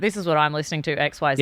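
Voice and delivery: ordinary talk, nothing marked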